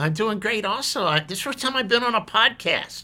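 puppet voice, very high. Puppet guest answering the podcast host on a first podcast, Indigo puppet voice. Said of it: "the first time we've had a puppet on the podcast".

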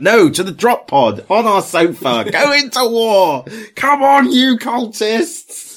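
shrill, very high, slow, drawn-out yell. Speaking to listeners from the living room, urging the cultists into war, shouting. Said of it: "I'm shouting at them".

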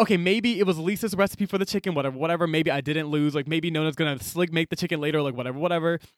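ordinary talk, nothing marked

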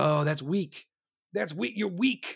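scornful, dismissive younger-crowd voice. Imitating the new generation scoffing at crying at a movie: imitating the new generation. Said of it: "the new generation will be like".

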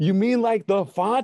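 mock shout. Retelling a friend shouting a question into a full room: imitating Pete shouting. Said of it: "so he shouts out in-".

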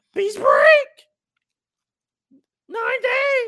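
very high, loud, booming, drawn-out fanboy shout. Imitating the way a wrestling promoter talks at live events: imitating Tony Khan's fanboy voice. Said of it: "Tony Khan sound like a fanboy".

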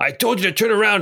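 very high shout, sounding far off. Game master voicing someone answering the party from out of sight: shouting back. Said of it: "You hear a voice shout back".

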